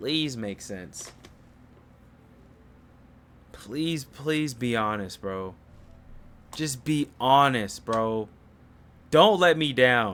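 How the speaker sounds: pleading, begging tone. Reacting to a panel guest about to speak: pleading. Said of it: "I'm pleading with you".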